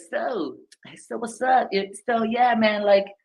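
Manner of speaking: very high, overly chummy, way too friendly casual patter. Showing a too-friendly way to ask someone for business, overly casual, too friendly. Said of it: "it's being too friendly".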